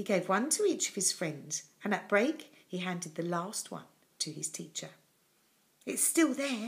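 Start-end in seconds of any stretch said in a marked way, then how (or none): 5.8-6.7 soft, secretive, hushed half-whisper. A boy confides in his teacher, half-whispered. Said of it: "he whispered".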